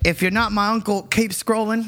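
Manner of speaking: clumsy bad Australian accent. Retelling a funny clip of an australian woman, the speaker uses a bad australian accent. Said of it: "I can't do the accent very well".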